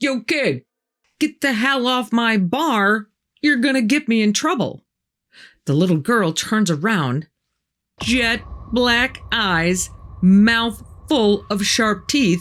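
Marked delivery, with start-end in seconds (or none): 0.0-4.8 mock light, high, mild yelling. Retelling how a bar owner yelled at a girl on the bar: imitating someone yelling. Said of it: "He yells".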